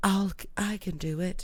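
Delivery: quiet, muffled voice. Retelling a story, speaking the line they heard: soft, muffled voice. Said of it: "in a soft, muffled voice".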